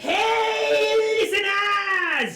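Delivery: full-volume, very loud, high shout, hey stretched out. Voicing a teacher greeting his class into a mic: full-volume shout. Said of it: "that's how he starts his class full volume".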